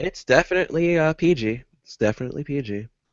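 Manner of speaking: sarcastic, tongue-in-cheek assured tone. Assuring the others that a quote has no cussing: sarcastic tone. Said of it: "That sounds sarcastic".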